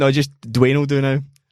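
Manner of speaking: ordinary delivery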